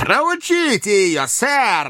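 swooping, very high outcry. Narrator reads a character's cry during a challenge: shouted, raising his voice. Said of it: "повысив голос, крикнул Слерк".

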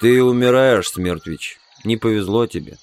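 ordinary delivery

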